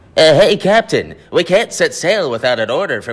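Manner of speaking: very high, loud squeaky voice. Performer plays Smee in a scene, addressing the Captain: Smee voice. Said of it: "I get to do like the Smee impression".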